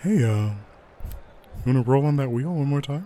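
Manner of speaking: soft whisper in character voice. A choking player hears Ion whisper in their ear: whispering like Ion. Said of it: "you hear someone like sort of whisper".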